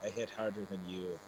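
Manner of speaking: ordinary delivery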